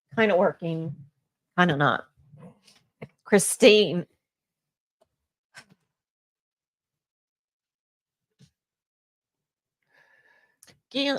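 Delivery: tearful voice, crying while speaking. Thanking people while trying to stop crying: crying while talking. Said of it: "I can't talk".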